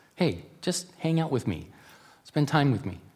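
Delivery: very small voice. Speaker retells hearing God speak while pushing to finish something, in a very small voice. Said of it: "in a very small voice".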